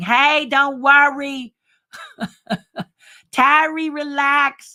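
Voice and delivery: put-on very slow, drawn-out, high Bronx accent. Reassuring a woman he loves imitating, imitating her accent. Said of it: "I love imitating her".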